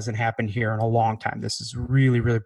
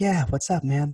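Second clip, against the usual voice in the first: put-on, soft-spoken performer voice, slower; 4 semitones higher than usual. Retelling going to Kenny's dressing room before the show, imitating Kenny's soft-spoken voice. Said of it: "he's got this really soft spoken".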